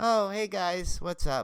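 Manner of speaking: slow, high, mock listless, totally down-sounding tone. Speaker retells running into someone around a corner: imitating Tiffany Shepis sounding down. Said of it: "And like totally down".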